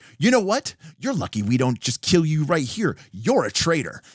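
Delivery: mock worked-up, angry, heated and fiery tone. Playing a character confronting a suspected traitor, heated and fiery. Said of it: "I'm getting fiery. I'm getting heated".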